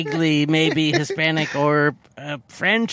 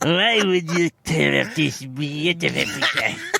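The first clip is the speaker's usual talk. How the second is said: put-on French accent. Retelling what the art teacher said to Dalton: imitating the art teacher's accent. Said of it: "whatever accent she's doing".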